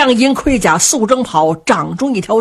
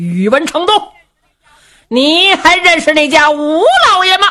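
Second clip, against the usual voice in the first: high, loud calling shout, hollering; 5 semitones higher, 3 dB louder than usual. A rider calls out to an opposing warrior, shouting loudly. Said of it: "高声喊嚷".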